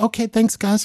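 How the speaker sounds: falsetto, high-pitched voice. Retelling meeting someone after a show, imitating his high voice. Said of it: "We're back to the high voice".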